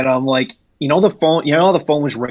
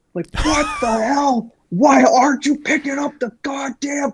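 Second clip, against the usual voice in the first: mock shrill, very high, furious screaming voice; 13 semitones higher than usual. Retelling a phone call from his district leader, imitating the boss's angry screaming. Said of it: "was screaming like Vince McMahon".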